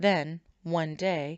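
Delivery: plain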